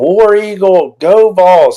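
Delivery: high, loud, mock screaming yell.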